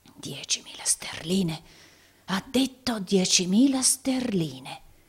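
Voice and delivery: rasping, hoarse, raspy whisper under the breath. Rodolfo, with his face turned away, murmurs to himself; hoarse whisper. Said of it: "mormorava in un rauco bisbiglio".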